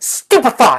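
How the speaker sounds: very high, very loud, fervent chanting incantation. Voicing a character casting a spell again: casting a spell with more fervor. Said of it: "she says one more time with a bit more fervor".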